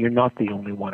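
plain

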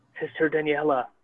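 quiet gentle character voice. Speaking as Otto, addressing Sister Daniela, in a very soft voice. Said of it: "like in a very soft voice".

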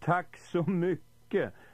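high, panicked, terrified shrieking scream. Narrator reads Arthur's reply to Benji at the table, screaming. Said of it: "skrek Arthur".

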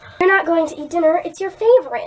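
bright, cheery and loud. Narrator reading the mother's line to her son, cheerful tone. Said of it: "she said in a cheerful tone".

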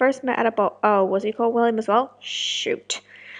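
ordinary delivery, nothing marked

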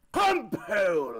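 put-on posh accent. Asked to say a phrase the stream chat requested, say it in posh voice. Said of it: "in my posh voice".

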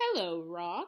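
bright, friendly, cheery calling out, pitched low. Narrator reading Monkey calling out to a rock in the river, cheery voice. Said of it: "he called out in a cheery voice".

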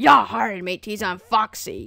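loud, booming, slow, drawn-out pirate voice. Showing how the Foxy voice should sound: Foxy voice. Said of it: "the Foxy voice is not do-, it's more like".

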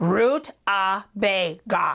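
slow, careful enunciation. The rutabaga answers the yellow pepper's question, enunciating slowly. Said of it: "the rutabaga enunciated slowly".

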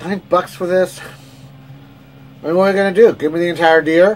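loud, bad, put-on Pittsburgh accent. Speaker giving an opinion on a steak, in a bad Pittsburgh Dad impression. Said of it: "bad Pittsburgh Dad impression".

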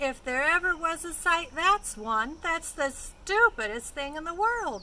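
loud, high, scornful jeering yell. Narrator reading a girl's outburst on seeing the strange animals near the cabin, yelling. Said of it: "she yelled".

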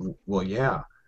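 mock grave, serious voice, stumbling start, halting. Retelling his wife's reply to his question, imitating someone serious. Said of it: "she looks at me real serious and she goes".

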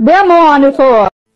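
loud, enraged cursing rant.

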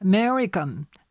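strong stress on the "me" syllable in "American". Pronunciation lesson on the word American: stress on me in American. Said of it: "目を強く言います".

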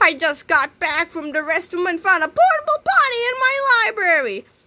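shrill, very high yell, climbing and swooping. A woman in her library shouts at two boys, shouting. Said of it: "shouted Miss Singerbrains".

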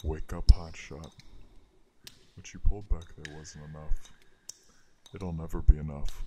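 low, deep whispering voice. A deeper voice speaks into the listener's ear to wake them, in a deep whisper. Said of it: "The deeper voice whispers in your ear".

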